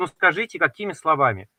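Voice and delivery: ordinary talk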